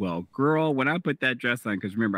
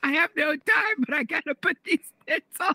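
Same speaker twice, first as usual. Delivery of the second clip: mock screeching scream in a very high, shrill voice. Retelling the speaker's reply when he asked why she was screaming; retelling a scream. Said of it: "Why are you screaming?".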